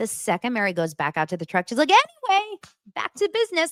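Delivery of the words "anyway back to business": play-acted laughing, very high-pitched talk. Retelling what someone said right after another person left, imitating someone laughing while talking. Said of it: "laughing again".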